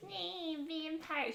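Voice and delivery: little high-pitched demon voice, taunting. Describing a movie character taunting the cops, imitate her taunting demon voice. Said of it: "her little like demon voice she does to the cops".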